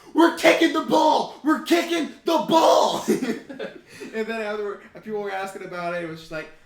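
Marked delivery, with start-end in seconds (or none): 0.2-3.1 shrill, very high, full-volume yell. Telling a football story, acting out a man who stood up and yelled. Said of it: "stood up and yelled".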